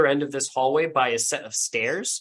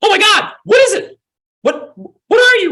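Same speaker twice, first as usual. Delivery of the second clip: alarmed woman screaming, shrill, very high, very loud; 12 dB louder than usual. Narrating a scene to players, voicing a woman heard above: screaming woman. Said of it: "she's screaming like".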